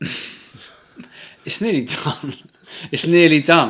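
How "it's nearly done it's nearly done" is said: higher, louder, laughing through the words. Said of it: "I don't know why I'm laughing".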